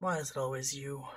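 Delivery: drained, worn-out, tired, weary tone. Telling the story, the speaker voices Shinso as he comes in and looks at the group; Shinso's tired tone. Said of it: "that tired tone of his is always there".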